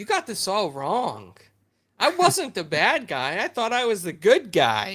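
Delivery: put-on untroubled sing-song. Retelling what the Abomination says from a prison cell: imitating Abomination being calm. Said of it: "he's all calm".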